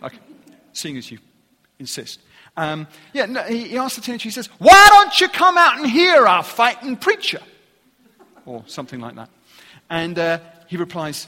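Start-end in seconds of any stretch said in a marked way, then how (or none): 4.6-7.4 put-on North Carolina accent, much higher, louder. Retelling a story, quoting a man inviting a teenager, attempted North Carolina accent. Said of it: "attempt the North Carolina accent".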